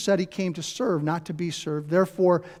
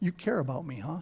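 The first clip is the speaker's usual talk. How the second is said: skeptical, doubtful mutter under the breath; 2 semitones lower, 7 dB quieter than usual. Retelling a man's reply to an offer to wash his windshield, imitating a skeptical mutter. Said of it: "sort of skeptic thing, and it was sort of under his breath".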